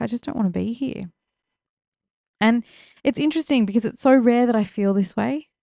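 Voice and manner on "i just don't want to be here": mock tearful, crying, breaking down mid-line. Retelling own words at a funeral after starting to cry: imitating own crying words. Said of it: "I just started crying and I was like".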